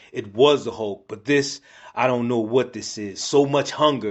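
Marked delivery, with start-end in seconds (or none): none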